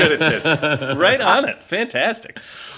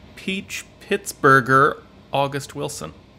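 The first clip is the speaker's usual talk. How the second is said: usual speaking voice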